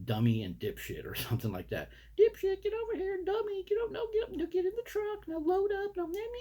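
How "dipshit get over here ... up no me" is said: play-acted, high-pitched, bickering shouting. Telling how a husband and wife loaded their dogs into a truck; retelling neighbors yelling at dogs. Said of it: "they're yelling the dog's names".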